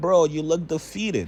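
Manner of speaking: ordinary talk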